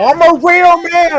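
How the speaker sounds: very high, very slow, drawn-out maniacal scream. Retelling how Jared threatened people, imitating a maniacal scream. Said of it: "maniacally screaming on the top of his lungs".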